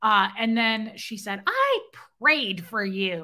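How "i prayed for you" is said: slow, drawn-out, swooping witch voice. Retelling what a woman said to the speaker: witch voice. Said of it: "In the witch voice".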